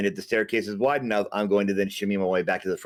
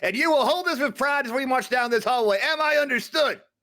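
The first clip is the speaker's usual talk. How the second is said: shrill, very high-pitched yelling. Giving her an order about the battle standard: yelling. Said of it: "and I am yelling this".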